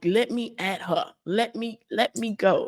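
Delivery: slow, aggressive, growling little-dog snarl. Retelling a walk when the chihuahua growled at a stray dog: imitating a growling dog. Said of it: "She was growling".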